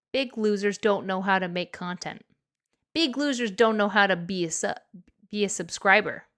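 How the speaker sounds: plain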